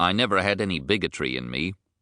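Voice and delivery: ordinary talk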